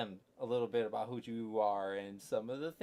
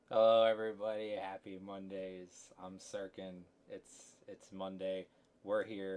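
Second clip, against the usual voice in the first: usual speaking voice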